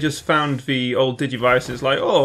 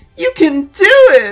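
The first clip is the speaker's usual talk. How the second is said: mock, shrill, very high, very loud sunny cheer; 10 dB louder than usual. Discussing which character could have done a good voice, upbeat Orihime impression. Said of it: "too upbeat".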